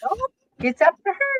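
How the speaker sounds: very high, squeaky put-on voice. Retelling the reply given when asked for more details, in a high-pitched voice. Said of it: "high pitched voice".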